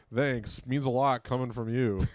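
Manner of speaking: normal talking voice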